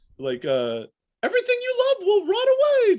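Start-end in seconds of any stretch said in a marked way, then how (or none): 1.2-3.0 put-on cartoon mouse voice. Showing a comedy bit about a trauma trigger: nihilistic Mickey Mouse voice. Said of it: "I do a Mickey Mouse voice".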